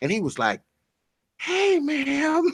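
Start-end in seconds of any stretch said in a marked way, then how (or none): 1.4-2.4 put-on squeaky girlish voice, very high-pitched. Retelling how a huge store worker greeted his wife: imitating a man sounding like a twelve-year-old girl. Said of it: "he sounded like a twelve-year-old girl".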